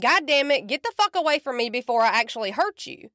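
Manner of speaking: ordinary delivery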